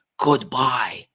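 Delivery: loud, very angry tone. Explaining tonal inference, saying goodbye in an angry way. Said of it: "that's really angry way of saying goodbye".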